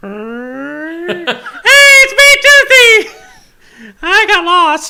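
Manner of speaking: very high, loud cartoon mascot voice, swooping, stretched "hey". As the host calls for the studio mascot to say goodbye, answering in Toothy voice. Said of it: "Was he doing that voice the whole time?".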